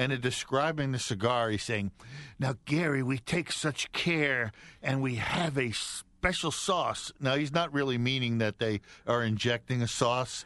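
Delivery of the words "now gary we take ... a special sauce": play-acted, very enthusiastic, eager, gushing voice. Retelling how the partner describes the cigar: imitating Pete, very enthusiastic. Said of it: "he's very enthusiastic like Anwar".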